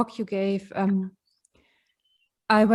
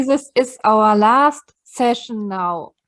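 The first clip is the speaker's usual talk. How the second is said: louder, slower delivery. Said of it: "can you speak a bit louder, please?".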